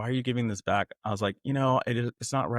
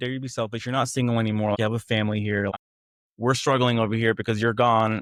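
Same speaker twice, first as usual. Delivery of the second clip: ordinary delivery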